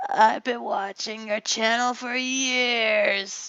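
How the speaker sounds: bad cartoon voice, "years" drawn out. Greeting viewers, the speaker imagines what SpongeBob would say: terrible SpongeBob impression. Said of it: "I make a terrible impression of that".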